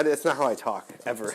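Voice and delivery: ordinary talk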